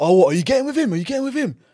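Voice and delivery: play-acted heated, pushy, high, rising accusing tone. Retelling how a man appeared and confronted a girl: imitating someone shouting. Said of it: "Started shouting at the girl".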